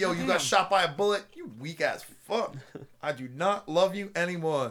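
put-on sassy, attitude-filled woman's voice.

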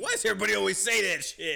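mad, fed-up tone. Retelling a scene from The Office: imitating a character getting mad. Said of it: "He gets all mad".

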